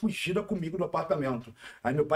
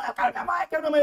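mock desperate child yell, shrill, very high, loud; 13 semitones higher, 5 dB louder than usual. Retelling yelling as a child while carried off on a bicycle: imitating own childhood yelling. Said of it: "Comecei a gritar".

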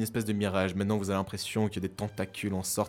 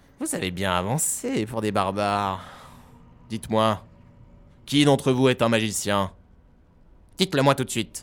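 loud, booming, thunderous voice ringing out; 7 dB louder than usual. Game master voicing a voice that rings out to the players: booming thunderous voice. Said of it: "Une voix tonitruante retentit".

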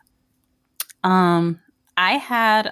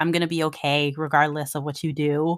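normal talking voice

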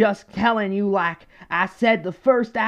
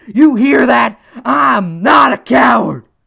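strained throat, loud and slow delivery; 4 semitones higher, 8 dB louder than usual. Doing an impression and ending with a defiant claim: Alex Jones voice. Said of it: "that Alex Jones voice actually does hurt my throat".

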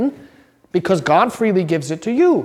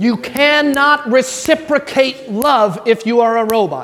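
fired-up, slow, excited yelling, every word landing; 3 semitones higher than usual. Repeating an explanation with enthusiasm to a listener, raising the voice from excitement rather than anger; yelling excitedly. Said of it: "I'm yelling because I'm excited about it".

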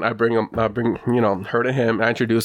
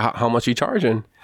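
ordinary talk, nothing marked

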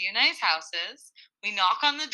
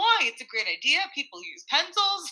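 mock deadpan, dry, dead-straight delivery with no laugh; 4 semitones higher than usual. Retelling what he said about the pencils: imitating a deadpan remark. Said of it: "says it with, like, a smirk on his face, but he doesn't, like, laugh".

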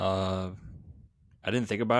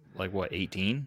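usual speaking voice

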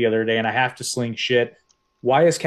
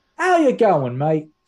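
fake Australian accent, pitched up; 6 semitones higher than usual. In a casual chat, greeting someone in a mock australian accent. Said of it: "can be Australian".

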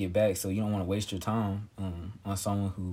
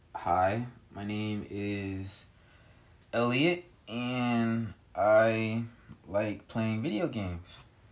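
slow, flat robotic voice. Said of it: "You sound so robotic".

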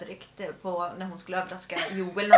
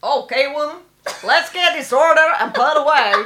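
put-on American Southern accent, much higher, louder; 7 semitones higher, 9 dB louder than usual. Asked for their best Southern accent, saying the practice line in a Southern American accent. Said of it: "och då kör vi din bästa southern".

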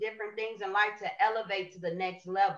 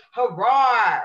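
loud hollering roar, let rip; 2 semitones higher, 12 dB louder than usual. Showing the audience your personal roar, a loud hollered roar. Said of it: "Why did you make me holler that loud?".

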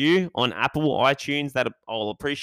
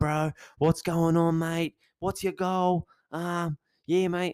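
macho, pumped-up gym bro voice, higher pitch; 5 semitones higher than usual. Describing the gym trainer who greets you when you walk in, imitating a gym trainer. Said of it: "I don't know who speaks like that".

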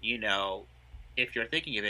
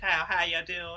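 put-on high-pitched, heavily laid-on Southern accent; 7 semitones higher than usual. Describing an actor's voice to another speaker: Leslie Jordan southern voice. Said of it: "very southern".

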